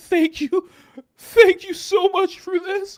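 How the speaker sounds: play-acted very high, very loud blubbering, sobbing voice. Picturing Blake Neff during spicy time, the speaker acts him out with Blake Neff mock crying. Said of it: "and he's crying and he's like".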